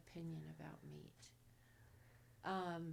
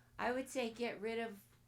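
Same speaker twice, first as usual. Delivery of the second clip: louder, higher-pitched and projected voice. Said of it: "so I'll speak louder".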